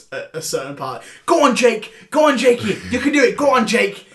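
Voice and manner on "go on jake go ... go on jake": very loud, high cheering shout at top of voice. Retelling cheering at a movie alone at home: imitating own shouting at top of voice. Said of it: "I was shouting at the top of my voice".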